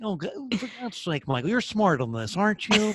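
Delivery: condescending newscaster voice. Acting out a critical inner voice: condescending Johnny Carson voice. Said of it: "very condescending and very newsy Johnny Carson".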